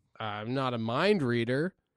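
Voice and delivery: ordinary talk, nothing marked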